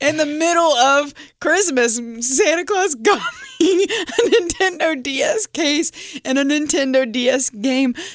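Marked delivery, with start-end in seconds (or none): 2.2-7.9 put-on wailing child voice. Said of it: "He's wailing".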